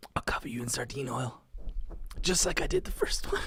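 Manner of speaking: acted menacing whisper. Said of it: "she just whispers in his ear".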